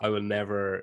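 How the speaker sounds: plain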